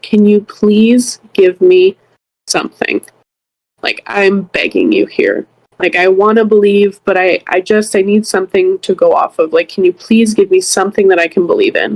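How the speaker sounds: imitated tearful, pleading tone. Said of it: "I was crying and I just looked up and I said".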